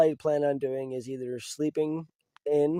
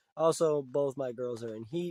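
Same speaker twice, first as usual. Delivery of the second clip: normal talking voice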